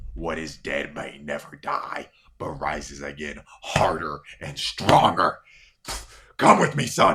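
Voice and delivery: growled, deep and loud. A storyteller voices a figure speaking to his son: growling. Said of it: "He growls".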